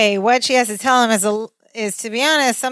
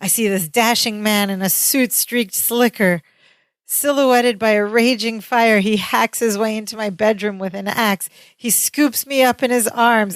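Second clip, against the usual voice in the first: plain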